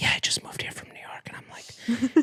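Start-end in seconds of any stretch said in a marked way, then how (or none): 0.0-1.3 hushed, self-conscious whisper. Retelling meeting the gym trainer, answering her question: imitating own whisper.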